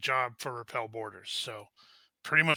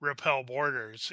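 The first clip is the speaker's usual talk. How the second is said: ordinary delivery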